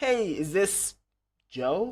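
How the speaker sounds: very drawn-out confused tone. Demonstrating how to open a sales phone call, confused tone. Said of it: "say in kind of confused tone".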